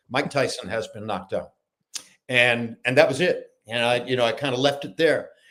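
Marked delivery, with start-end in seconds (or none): 0.1-1.5 very low-key, soft, understated delivery. Repeating the line he once delivered, lowest-key understated delivery. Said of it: "the lowest key I could possibly reach, as understated as possible ... in just about that tone of voice".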